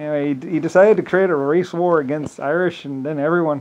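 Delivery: normal talking voice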